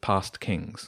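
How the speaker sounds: ordinary delivery, nothing marked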